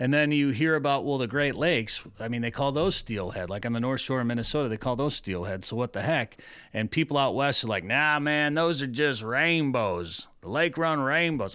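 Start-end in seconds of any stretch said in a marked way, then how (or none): 7.8-11.5 slow, drawling put-on southern accent. Retelling what people out west say about steelhead, in an accidental southern-sounding accent. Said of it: "Sounds like they're from the south".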